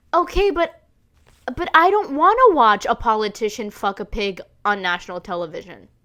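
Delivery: ordinary delivery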